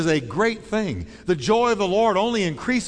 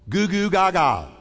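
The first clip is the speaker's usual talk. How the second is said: nonsense infant gurgling and babbling sounds. Explaining the verse about talking like a child, baby talk. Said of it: "That's the way I talk as a child".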